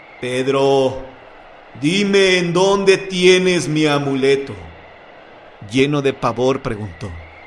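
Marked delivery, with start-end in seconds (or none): 0.2-4.5 slow, sepulchral voice from beyond the grave. Reading a ghost story aloud, the ghost demands its amulet: voice from beyond the grave. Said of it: "con voz de ultratumba preguntó".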